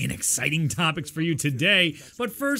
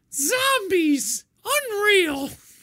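mock complaining voice, higher pitch; 3 dB louder than usual. Imitating a friend's complaining phone calls: imitating Johnny complaining. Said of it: "Johnny bitching about things".

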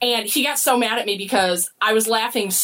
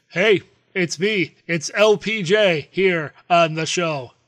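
put-on robot voice, pitched lower; 4 semitones lower than usual. Introducing yourself on the show: robot voice. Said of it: "I was taking over the robot voice".

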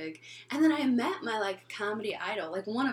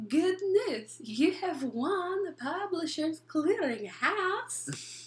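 slow put-on Eastern European accent; 8 semitones higher than usual. Retelling a prank call to a friend: put-on Eastern European accent. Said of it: "They're hiring Eastern Europeans?".

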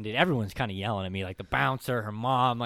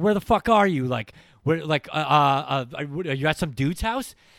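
freaked-out, frantic, high, stammering panic; 5 semitones higher, 7 dB louder than usual. Retelling calling a girlfriend again and again: imitating own past panic. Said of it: "I'd be freaking out".

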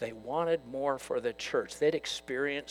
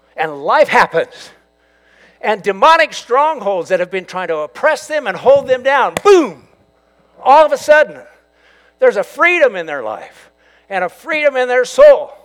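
very loud, high-pitched, soaring preaching; 9 semitones higher, 20 dB louder than usual. Speaking to an audience, then apologizing for it, getting loud. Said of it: "sorry, I'm getting loud".

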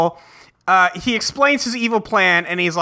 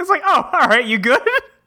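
ordinary talk

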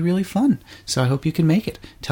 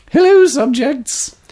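put-on proper elderly British lady voice, higher and louder; 11 semitones higher, 6 dB louder than usual. Answering when asked for a proper Maggie Smith voice: proper Maggie Smith voice. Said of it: "What is your most proper Maggie Smith voice?".

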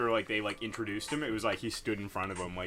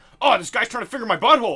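put-on outraged, indignant shout, high and loud; 12 semitones higher, 13 dB louder than usual. Retelling an Eric Andre sketch, mock-angry Eric Andre impression. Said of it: "all mad".

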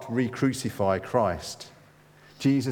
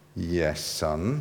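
through clenched teeth, lower and quieter; 5 semitones lower, 3 dB quieter than usual. In a joke, a mother answers her son's question, replying through clenched teeth. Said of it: "Mum replied through clenched teeth".

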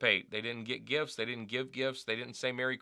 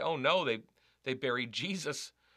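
wry, half-sarcastic cry of dismay. Retelling driving past a snow-buried nativity scene: retelling an almost sarcastic exclamation. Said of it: "exclaimed in a almost sarcastic way".

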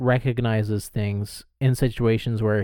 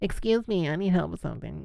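high-pitched put-on blonde voice; 7 semitones higher, 4 dB quieter than usual. Recounting a disguise scene from the last episode, doing Rosa's put-on blonde voice. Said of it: "putting on her blonde voice".

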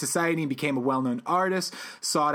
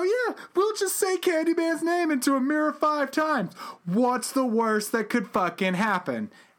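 mock, scoffing, pitched-up send-up voice; 11 semitones higher than usual. Retelling horror-movie characters' plan to say Candyman's name: mocking retelling of their words. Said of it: "you say this with a mocking tone".

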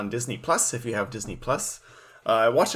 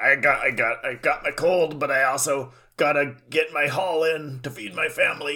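put-on very slow, grizzled old sea captain voice; 3 semitones higher than usual. Picturing a sea captain on the docks with a cold: grizzled old sea captain voice. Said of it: "a grizzled old sea captain out at, out on the docks being like".

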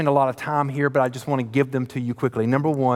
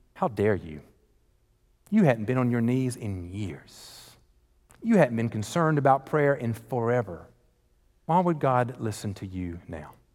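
put-on whisper, quieter; 2 semitones lower, 4 dB quieter than usual. Speaker acting out what Satan whispers in a listener's ear, imitating Satan whispering. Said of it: "Satan will whisper in your ear".

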